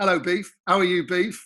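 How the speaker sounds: usual speaking voice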